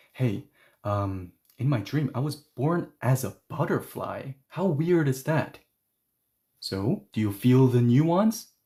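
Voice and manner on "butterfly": emphasis on 'as a butterfly'. Demonstrating how stress changes nuance, stress on 'as a butterfly'. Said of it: "now it sounds like this".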